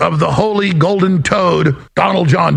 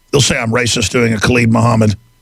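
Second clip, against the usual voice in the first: ordinary talk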